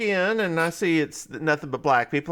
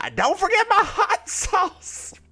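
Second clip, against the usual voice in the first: screaming, pitched very high and swooping; 14 semitones higher than usual. Retelling a customer at a barbecue counter: imitating a woman screaming. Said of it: "starts screaming at him".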